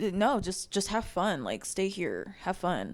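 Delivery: pointed, loaded passive-aggressive brush-off tone. Retelling what a man told his fiancée, imitating a passive-aggressive tone. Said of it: "a passive aggressive way".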